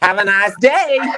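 very loud, shrill, high-pitched put-on American accent. Asked for the most American thing in an American accent: American accent. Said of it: "the most American thing you can say in an American accent".

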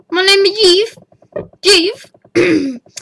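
high, drawn-out voice cracking on words. Speaker introduces themself at the start of a video, voice cracking. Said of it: "My voice is kind of cracking again".

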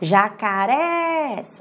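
jacarés, stressed and rising final syllable -rés. Teaching word stress by calling jacarés at the gate: stress on last syllable. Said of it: "Olha só, subiu o res. Então, essa sílaba que subiu é a sílaba forte".

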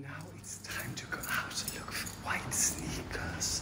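barely voiced, very quiet hushed whisper. Greeting someone as darling before heading out, whispering. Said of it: "I don't know why I'm whispering".

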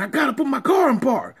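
play-acted, very high, loud screaming. Retelling his reply to the man at his car, re-enacting screaming back. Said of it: "So I'm screaming back at this fool".

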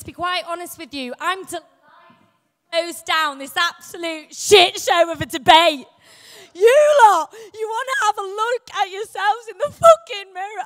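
loud, overwrought, emotional ranting outburst. Closing speaker for the opposition in a debate addresses the audience: emotional outburst. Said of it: "I'm sorry, I'm emotional".

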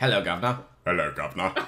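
low, deep, put-on English accent.

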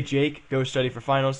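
normal talking voice

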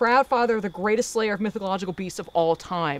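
normal talking voice

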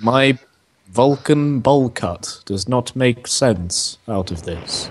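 coolly logical, flat, level alien-like voice. Told to think logically, answer by doing a Spock impression. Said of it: "I was doing a Spock".

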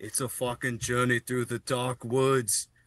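put-on Finnish accent. Describing what Dirt Master says early on, the speaker quotes him: Dirt Master's Finnish accent. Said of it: "in like the Finnish accent".

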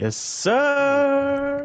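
cheerful. A co-host answers the host's show opening, jolly. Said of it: "Frozen sounded jolly there".

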